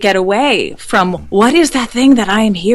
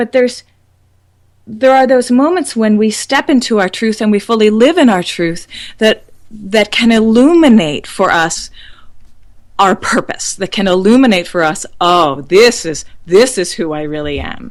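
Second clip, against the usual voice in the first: tearful voice, catching and choked up. Speaker talking with a listener, getting teary. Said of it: "I'm getting teary".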